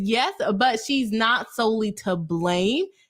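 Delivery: ordinary delivery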